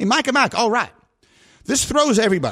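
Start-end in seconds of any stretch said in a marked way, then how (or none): 0.0-0.9 put-on heavy, thick Texas accent, pitched up. Repeating the president's greeting to him and Mike, doing President Bush's heavy Texas accent. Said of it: "Very Texas".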